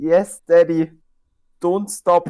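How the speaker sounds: put-on slow, very heavy German accent. Retelling a woman trying out dirty talk in English: extremely heavy German accent. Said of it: "Den deutschesten Akzent, der es einfach fucking gibt".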